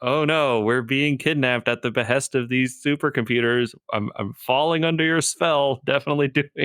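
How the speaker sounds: breezy, unbothered, offhand, nonchalant delivery. Imitating Boimler from the show: nonchalant Boimler impression. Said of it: "I love how, like, nonchalant he is".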